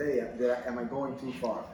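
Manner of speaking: ordinary talk, nothing marked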